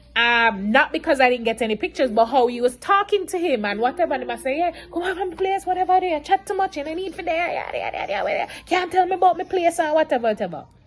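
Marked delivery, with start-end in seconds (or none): 4.5-9.7 put-on heated, angry ranting outburst, pitched up. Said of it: "This is exactly how the man come out".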